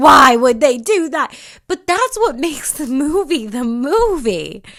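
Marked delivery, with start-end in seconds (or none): 0.0-1.4 very loud sobbing, crying scream. Recalling watching Avatar, reenacting yelling at the TV: imitating crying and screaming. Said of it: "crying and screaming at the T V".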